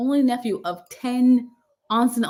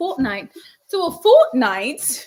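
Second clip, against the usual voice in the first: loud put-on English accent on the word "fortnight"; 5 dB louder than usual. Closing a show, a host says the word in an english accent. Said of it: "in my English accent".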